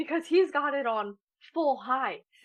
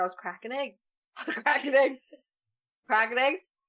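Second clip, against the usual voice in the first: ordinary delivery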